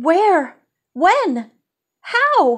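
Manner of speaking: high, stunned, incredulous outburst. Bess tells Nancy that Nelda has disappeared; Nancy answers, exclaiming in disbelief. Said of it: "Nancy exclaimed in disbelief".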